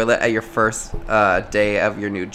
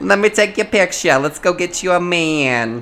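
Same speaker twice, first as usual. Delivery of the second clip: put-on New Jersey mom accent, pitched up, "man" drawn out; 8 semitones higher than usual. Imitating a mom who runs a dating app: New Jersey accent. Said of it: "I always picture moms with the New Jersey accent".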